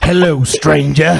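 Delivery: rough, loud, high-pitched voice. Joking that a woman in a mask is a game merchant: Resident Evil 4 merchant voice. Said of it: "she's the merchant from, uh, Resident Evil four".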